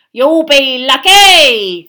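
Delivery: very loud, high cackling ghost voice, "lucky" stretched. Reading a story aloud, the narrator voices Peeves cutting in on Dumbledore: cackling voice. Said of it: "said a cackling voice".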